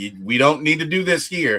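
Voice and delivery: ordinary talk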